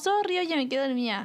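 put-on playful apologetic tone. Acting out an apology for falling asleep: imitating a joking apology. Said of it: "es como un sorry chistoso".

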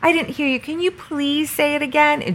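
put-on sweet, high, cute tiny-child toy voice. Quoting what Boo Buddy says when it mishears, in a Boo Buddy cute little kid voice. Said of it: "Boo Buddy has the cutest little kid voice".

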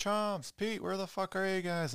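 very high-pitched, acted, calling-out yell. Retelling how everyone suddenly vanished from the building, retelling a yell. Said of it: "like I'm yelling like Tony".

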